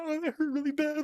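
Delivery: very high, tearful crying outburst sounding pained. Retelling burning a hand in class, imitating own past crying. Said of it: "freaking out, like, crying".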